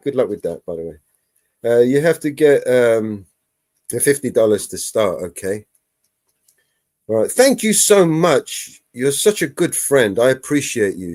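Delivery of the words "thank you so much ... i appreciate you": mock insincere, sarcastic delivery. Reading out a reply written earlier in a chat: retelling own sarcastic reply. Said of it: "that's me being sarcastic".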